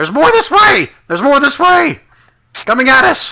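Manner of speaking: very high, loud, swooping alarmed scream. A game narrator voices a character calling out during a fight, screaming. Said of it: "he starts screaming".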